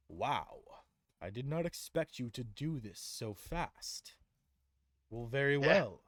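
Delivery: slow, drawn-out, genuinely impressed tone. Voicing Gorb on his throne, impressed by the heroes. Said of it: "he looks to you impressed".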